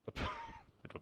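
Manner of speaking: speaking through laughter. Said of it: "What are you laughing at".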